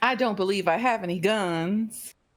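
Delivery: put-on delicate, dainty Southern belle accent, drawn-out "guns". Speaker voicing a character, dainty Southern voice. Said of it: "dainty southern".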